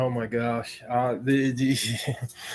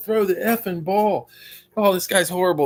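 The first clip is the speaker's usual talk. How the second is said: mock, high, raised yelling; 6 semitones higher than usual. Retelling yelling at a quarterback on TV, imitating own yelling. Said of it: "I'll be yelling".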